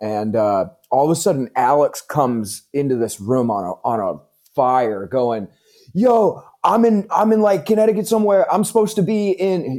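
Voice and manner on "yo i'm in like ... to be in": put-on thick Jersey accent, pitched much higher. Retelling how Alex came into the clubhouse room, Alex's thick Jersey accent. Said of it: "thick Jersey accent".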